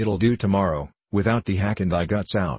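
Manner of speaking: ordinary talk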